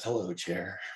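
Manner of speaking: put-on whisper under breath. Retelling what grandpa said on reaching his chair: imitating a whisper under breath. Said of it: "he whispered under his breath".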